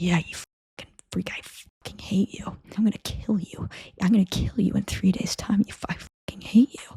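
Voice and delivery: whispered, muttered. Describing a show character whispering threats to Scott across a room: retelling whispered threats. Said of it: "whispering under his breath threats to Scott".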